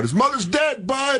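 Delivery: shrill, high, drawn-out scream. Recalling a moment at the back of a theater before a recording, retelling a scream. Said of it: "I just screamed out".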